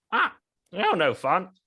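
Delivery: high, puppet-like ventriloquist dummy zombie corpse voice. Voicing the beheaded zombie head complaining: puppeted zombie corpse voice. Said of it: "the corpse just goes like".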